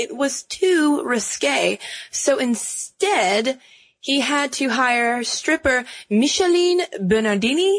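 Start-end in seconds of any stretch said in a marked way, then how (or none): 6.1-7.8 over-the-top, terrible, pitched-up French accent. Telling the bikini's history, says the model's name in terrible French accent. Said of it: "That's my terrible French accent".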